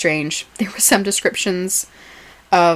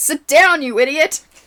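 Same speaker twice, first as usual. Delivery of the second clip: high-pitched, loud mock yell. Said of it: "Somebody yells out".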